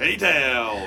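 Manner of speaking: booming announcer delivery. Wes, asked by his co-host to say the track name: announcer voice. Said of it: "Wes has got this announcer voice".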